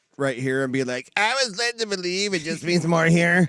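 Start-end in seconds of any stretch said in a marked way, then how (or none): 1.2-3.5 cartoon character voice. Mocking a football conference that just lost, in an Eric Cartman voice. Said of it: "I'm gonna insert my Eric Cartman voice".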